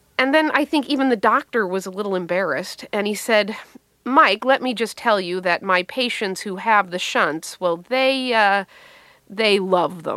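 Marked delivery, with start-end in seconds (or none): none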